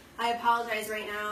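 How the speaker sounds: normal talking voice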